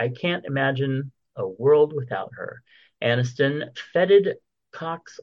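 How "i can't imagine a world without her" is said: usual speaking voice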